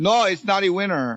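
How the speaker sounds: fake, put-on Chinese accent. Retelling a store worker's reply to a lotto customer: put-on chinese accent. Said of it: "I giving him a Chinese accent".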